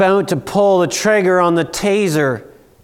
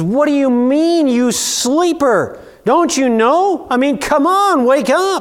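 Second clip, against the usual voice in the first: frantic, desperate, pitched-up acted voice; 8 semitones higher than usual. Retelling the captain at sea coming to wake Jonah, imitating a desperate captain. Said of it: "There's desperation in their voice".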